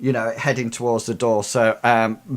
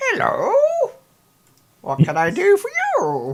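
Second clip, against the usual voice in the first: put-on very high, sing-song, swooping little old lady voice. Voicing a summoned spirit that looks like a little old lady: voicing a little old lady spirit. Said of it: "appears and goes".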